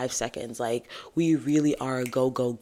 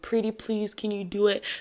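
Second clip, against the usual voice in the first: mock begging tone, higher pitch; 8 semitones higher than usual. Retelling how a manager asked to take on shifts: imitating manager begging. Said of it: "my manager kept begging me".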